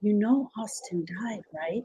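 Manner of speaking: hushed voice dropped right down. Retelling what was said to a grieving friend on the phone: retelling a lowered voice. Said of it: "I lowered my voice and said it".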